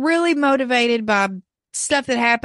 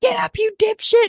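very high, shrill, screeching yell; 11 semitones higher than usual. Recounting how one man screamed at poor Stu, retelling a scream. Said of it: "He's screaming at poor Stu".

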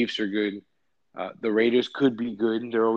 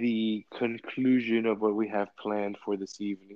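stately, put-on butler voice; 4 dB quieter than usual. Host closing out the evening's episode, sounding like a butler. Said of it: "I wanted to just sound like a butler there".

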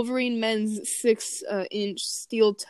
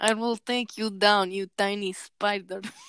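put-on Russian-accented voice. Challenging a rival spider in a voice: Zarya voice. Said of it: "I'm better with Zarya's voice".

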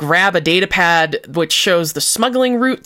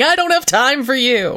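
put-on yell, much higher; 6 semitones higher than usual. Recapping a scene, the speaker acts out Kao running with a grenade, retelling Kao's yell. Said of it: "live grenade yelling".

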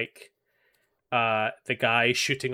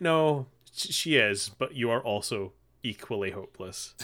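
usual speaking voice

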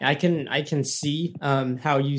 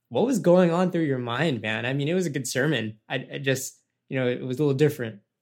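plain

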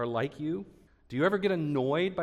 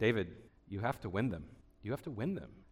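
put-on Scottish accent, low, soft, quietly earnest; 6 semitones lower, 6 dB quieter than usual. The speaker quotes a man's advice about ministry: imitating a Scottish accent. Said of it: "he said it in his Scottish accent".

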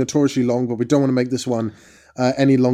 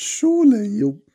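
high voice cracking mid-phrase; 8 semitones higher than usual. Arguing that alcohol would make bad movies bearable: voice cracking. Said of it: "my voice broke".

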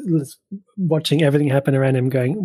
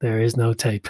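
put-on flat movie-star delivery, lower pitch; 4 semitones lower, 3 dB quieter than usual. Recounting a film scene, quoting the actor's reply, Liam Neeson mock-deadpan. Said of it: "it's so deadpan".

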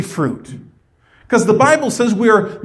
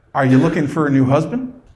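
mock-teasing joking tone, much lower; 8 semitones lower than usual. Speaker retells jokingly asking an older widowed lady a question: retelling a joking question. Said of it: "And I jokingly said".

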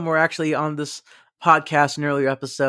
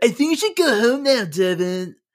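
relaxed, laid-back Californian accent, pitched up; 5 semitones higher than usual. Co-host says he'll only get chiller, talking like the guy from The Californians. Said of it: "I'll be talking of like the guy from the Californians".

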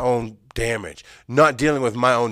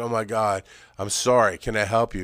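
mock tearful crying, quieter; 2 semitones lower, 3 dB quieter than usual. Retelling what a crying woman said while the speaker hid under a table, imitating someone crying. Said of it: "she's crying".

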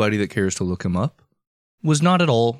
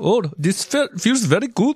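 put-on high, very old man voice with Indian accent. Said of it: "really old man Indian voice".

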